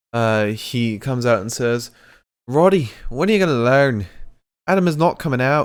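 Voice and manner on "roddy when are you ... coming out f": loud, brash pro wrestler style delivery. Retelling what Finn Balor said to Roddy in the ring: Finn Balor impression. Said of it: "Finn? ... Finn, is that you?".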